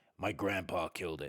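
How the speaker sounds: monster voice growling out the words. Reading a story aloud, voice the monster speaking to its guest, growling. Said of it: "said the monster, growling".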